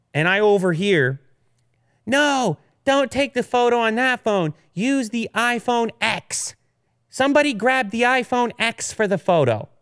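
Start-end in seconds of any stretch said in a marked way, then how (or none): 2.1-9.0 put-on twelve-year-old girl voice, high and rather hoarse. Speaker retells a remark overheard while eating an ice cream sandwich, 12-year-old girl's voice. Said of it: "a 12-year-old girl's voice".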